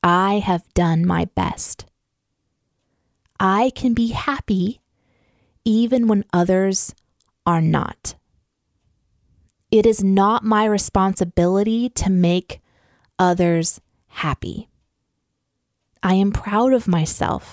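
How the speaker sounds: speaking slowly. Reading affirmations to listeners with eyes closed, speaking slowly. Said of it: "I'm going to speak them kind of slowly to you".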